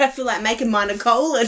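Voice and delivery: ordinary talk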